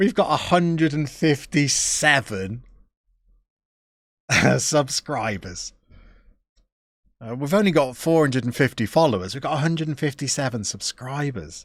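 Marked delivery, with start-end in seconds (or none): 0.0-5.7 slow delivery, giggling throughout. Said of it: "Sorry, I'm giggling".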